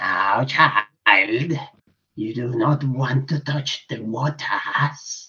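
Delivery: put-on croaking old hag voice. Narrating a scene, the speaker voices an old crone addressing a child, shrill croaking voice. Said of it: "she croaks in this shrill voice".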